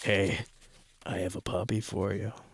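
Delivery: sleazy, creepy, luring voice. Reading a personal ad aloud for laughs: creepy predator voice.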